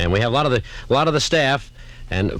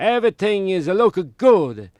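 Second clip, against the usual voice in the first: put-on Italian accent; 5 semitones higher than usual. Asked to talk in English, greeting Thomas, J. Carrol Naish impression. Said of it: "How come you sound like J".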